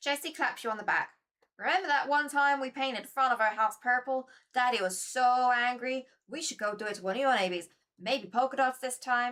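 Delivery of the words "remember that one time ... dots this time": put-on Southern accent. Voicing a character who claps the listener on the back, put-on southern accent. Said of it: "are you ready for the Southern accent again?".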